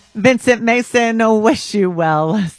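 words broken up by laughter. Wishing someone well before telling a joke, laughing while speaking. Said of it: "Sorry, I'm laughing".

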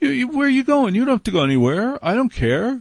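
fast, high, eager pleading.

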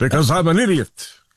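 put-on aardvark-like creature voice. Doing an impression of Bernie Sanders that another speaker asked for: Bernie Sanders impression. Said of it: "an impression of Bernie Sanders".

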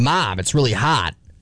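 Wisconsin way of pronouncing. Comparing regional dialects, saying a line the Wisconsin way. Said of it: "That's how we say it in Wisconsin".

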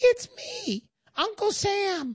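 very slow, tiny, sing-song, drawn-out swooping voice. Telling a joke about a bank teller, the little voice answers in a tiny Uncle Sam voice. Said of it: "the little voice says".

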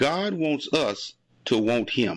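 deliberately very slow delivery. Repeating a phrase so listeners can catch it, very slow. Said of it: "if you say it slow enough".

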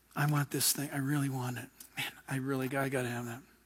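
mock, hushed, low, soft, craving murmur.

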